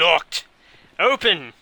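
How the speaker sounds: put-on British accent. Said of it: "with a strong British accent".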